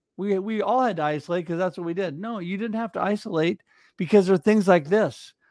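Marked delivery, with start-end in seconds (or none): none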